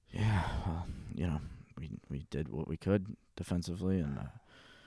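put-on annoyed, uncaring voice. Imitating answers to a question while acting annoyed: Belichick impression, annoyed and emotionless. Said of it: "He's like".

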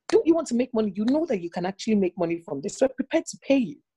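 snappish retort. Retelling a friend bringing a request, imitating her snapping. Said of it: "She snapped at me".

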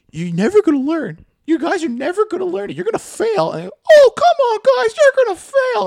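very high, squeaky, swooping teacher voice. Retelling a trades teacher telling the class they'll fail, imitating his really high voice. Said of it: "had like a really high voice".

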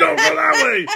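loud yelling, called out. Recounting a road argument, quoting what she yelled at them, retelling a yell. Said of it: "yell at me".

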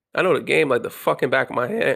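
voice cracking and breaking mid-sentence. Speaker bragging that he knows the game when his voice cracks. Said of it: "My voice cracked".

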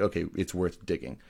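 normal talking voice

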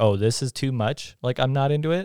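usual speaking voice

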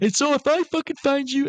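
crazed, unhinged voice pitched very high. Retelling how an emotional man flipped back to crazy: imitating an unhinged threat. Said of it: "he flips back to crazy person".

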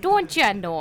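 put-on Minnesota and Canada way of talking. Talking about how people in Minnesota and Canada talk, in a Minnesotan accent. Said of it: "they have that kind of talk".

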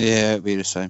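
sounding resigned. Answering which film is more rewatchable, the same as the others: resigned. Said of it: "You sound resigned there".

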